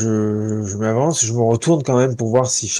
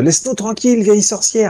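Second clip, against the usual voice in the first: very high, rapid-fire shouting yell; 10 semitones higher than usual. While his character runs after Charles, the player calls out to the old witch, shouting. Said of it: "je crie euh".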